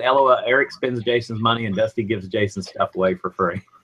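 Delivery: ordinary talk, nothing marked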